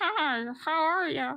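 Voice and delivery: put-on very high, tiny little stuffed-bear voice. Waving a teddy bear's arm, the speaker greets someone in a little teddy bear voice. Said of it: "I do a little voice go".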